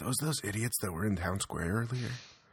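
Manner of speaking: hushed whisper. Game master voicing townsfolk whispering to each other about the party, whispering. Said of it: "kind of whispering to each other".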